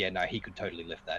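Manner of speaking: ordinary talk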